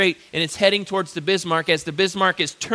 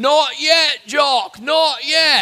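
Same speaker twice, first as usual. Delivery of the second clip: put-on very slow, loud, drawn-out, thick English accent; 8 semitones higher, 5 dB louder than usual. Retelling a man hanging out the side of a plane: thick English accent. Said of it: "saying in a thick English accent".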